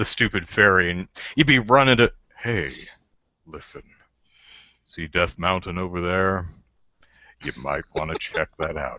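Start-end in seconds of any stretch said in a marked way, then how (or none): 2.4-9.0 authoritative, cool, commanding narrator voice. Voicing the fairy as recast: really commanding, cool voice. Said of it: "a really commanding, cool voice".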